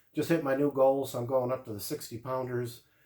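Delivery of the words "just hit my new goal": ordinary talk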